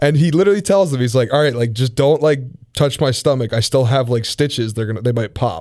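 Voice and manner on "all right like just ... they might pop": ordinary delivery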